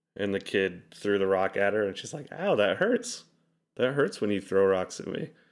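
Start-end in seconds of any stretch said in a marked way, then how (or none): 2.4-5.3 acted light, playful, good-natured, friendly tone. Retelling a parent's reply after a child threw a rock: imitating a playful, friendly tone. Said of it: "in a playful, kind of friendly way".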